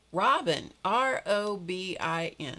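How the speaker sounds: very slow, condescending, talking-down voice. Imitating how your name gets spelled back, mock talking down to a toddler. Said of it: "it would sound like this, like you're a two-year-old".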